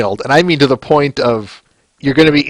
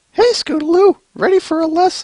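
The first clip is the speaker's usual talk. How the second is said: very high, bad cartoon character voice. Reading a comic aloud, first try at a character voice. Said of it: "No, that's terrible".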